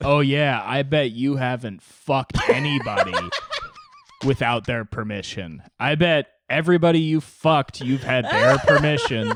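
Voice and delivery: loud, sing-song, thick mock sarcasm. Acting out being sarcastic to a normal guest: put-on sarcasm. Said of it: "be sarcastic for the entire hour".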